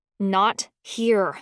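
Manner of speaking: words forced through clenched teeth and jaw. The narrator answers Daddy's shouted question, through clenched teeth. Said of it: "I said through clenched teeth".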